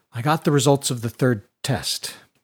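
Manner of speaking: plain reading voice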